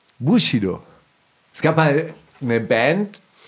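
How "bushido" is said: Bushido with stress on first syllable Bu. Explaining Japanese pronunciation of Bushido, stress on Bu in Bushido. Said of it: "Auf Japanisch wäre die Betonung nicht auf dem Shi, sondern auf dem Bu".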